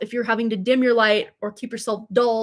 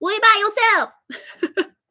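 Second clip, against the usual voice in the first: put-on squeaky, funny, very high little-girl voice; 11 semitones higher, 3 dB louder than usual. Imitating the little girl in her car seat, in a funny little-girl voice. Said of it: "back to the funny voices".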